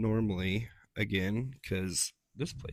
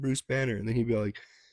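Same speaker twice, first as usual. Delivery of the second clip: ordinary talk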